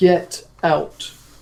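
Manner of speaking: loud resonant voice. Recapping the game for the players: booming voice. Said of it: "there was a booming voice of".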